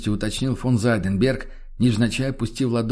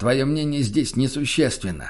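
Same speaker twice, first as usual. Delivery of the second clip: usual speaking voice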